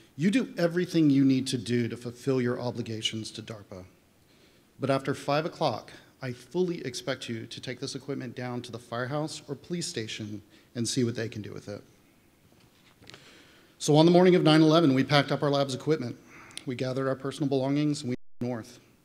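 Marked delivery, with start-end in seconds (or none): none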